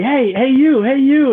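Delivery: mock, very high, shrill, drawn-out scream. Retelling how a teammate's grandmother called out across the street: imitating someone screaming. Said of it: "she started screaming at me".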